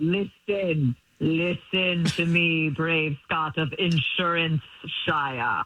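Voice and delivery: very low, deep, grand epic fantasy voice. Calling a boyfriend as a prank: mock Lord of the Rings voice. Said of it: "Why are you talking to me like".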